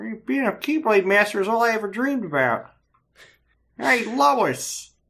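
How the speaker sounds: very high-pitched cartoon voice. Discussing a game character's voice, the speaker delivers his line as Peter Griffin. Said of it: "Terra is Peter Griffin".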